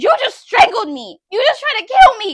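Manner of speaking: very high, shrill, very loud screaming. Retelling following someone into the bedroom: retelling own scream. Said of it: "I scream".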